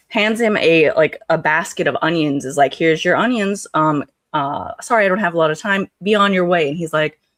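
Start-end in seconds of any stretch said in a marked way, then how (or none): none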